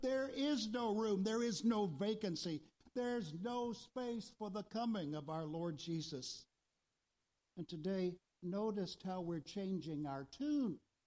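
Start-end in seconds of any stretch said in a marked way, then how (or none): 0.0-6.5 mock speech with every word spoken clearly and distinctly. Speaker retelling the innkeeper's reply in the sanctuary, loud, distinct voice. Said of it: "the innkeeper up here in the sanctuary responded in like manner".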